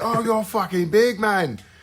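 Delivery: put-on British accent, pitched way up. Retelling what a man with a British accent said to them, imitating a British accent. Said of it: "Is that how he sounds?".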